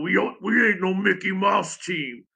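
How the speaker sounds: slow Virginia drawl, words stretched long. Quoting the coach's motto: imitating Lefty's Virginia drawl. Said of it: "if you can hear him in his Virginia drawl".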